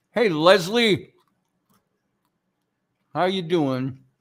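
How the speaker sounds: talking with mouth full. Greeting someone at the start of the pre-show while eating, talking with mouth full. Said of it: "I'm going to finish eating this slice of freezer pizza".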